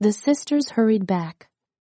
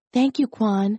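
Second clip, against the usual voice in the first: plain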